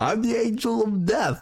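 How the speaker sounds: very high, spooky voice. Imitating a movie line, then asking about it: Christopher Walken impression. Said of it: "that Christopher Walken impression".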